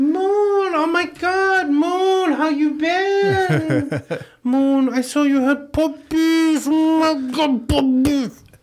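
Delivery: very high, put-on auntie voice. Imagining how they'd sound with high estrogen, greeting someone called Moon: imagined high-estrogen voice. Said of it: "what I would sound like with high estrogen".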